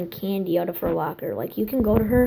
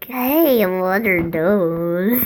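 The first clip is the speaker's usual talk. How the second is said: put-on baby voice, little-kid voice, slower. Speaker showing how they sometimes act like a little kid, baby voice. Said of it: "Or I'll do something like".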